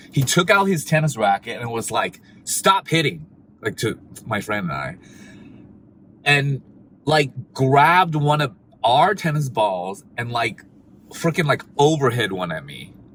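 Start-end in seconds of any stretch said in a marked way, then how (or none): 2.4-3.2 play-acted, hostile, harsh tone. Retelling a tennis player ordering them to stop: imitating someone hostile. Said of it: "he's super hostile".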